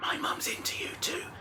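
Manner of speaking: slow, overdone, exaggerated, hushed stage whisper. Quoting what the little girl whispers in the scene: exaggerated stage whisper. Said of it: "whispers like in that sort of exaggerated way".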